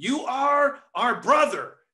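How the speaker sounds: high-pitched shriek, screamed out. Recounting a movie scene where a sister confronts her brother: retelling a scream. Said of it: "and she screams it".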